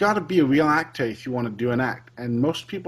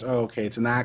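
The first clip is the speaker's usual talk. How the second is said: plain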